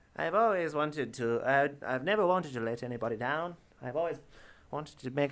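put-on regal, royal-sounding British voice. Speaker slips into a Queen Liz impression mid-sentence. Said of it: "I'm just doing my Queen Liz impression".

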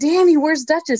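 very high, shouted yell. Retelling calling out to ask where the cat is: retelling a yell. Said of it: "And I yelled out".

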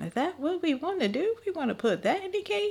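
very high, breezy, swooping, joking teasing tone. Retelling how mom casually questioned a cake idea, imitating her joking tone. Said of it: "she had kind of jokingly".

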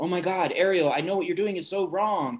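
acted fearful gasp. Describing a viewer watching Ariel give her voice to the sea witch: mock-fearful gasp. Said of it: "you're fearful because you're like".

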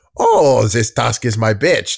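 very poor, bad put-on comedy dog character voice. Inventing a line Triumph would never say: very poor Triumph impression. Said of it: "That was my very poor impression of Triumph".

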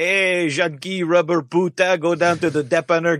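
put-on Quebecois accent. Speaker imagining how Quebecois people would talk, in a Quebecois accent. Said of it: "If they were Quebecois, they'd be all like".

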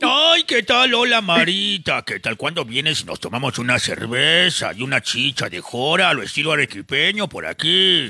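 animated-sitcom cartoon character voice. Sending greetings to a caller's friends on request: Homer Simpson voice. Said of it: "con la voz de Homero Simpson".

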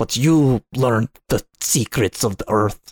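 bitter, openly angry, pissed-off voice. Retelling how Tenenbaum sounds in the ultra bad ending: imitating angry Tenenbaum. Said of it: "she's just more angry. She's like".

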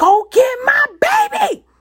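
very high, very slow, loud top-of-lungs drawn-out scream. Retelling a night scare in bed, imitating her own scream. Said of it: "I screamed at the top of my lungs".

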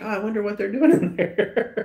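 high, naive wondering tone with a laugh.

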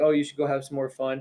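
ordinary talk

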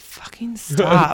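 loud, fed-up, had-enough exasperated outburst. Retelling a podcast story about constant bits: imitating Amy Poehler, exasperated. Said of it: "rolling her eyes".

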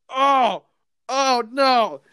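sudden, high, loud yelled outburst. Retelling chopping onions with tears streaming down his face, retelling a yell. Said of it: "And I'm yelling".

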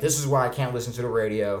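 ordinary delivery

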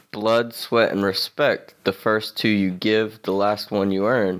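ordinary talk

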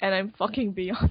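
ordinary delivery

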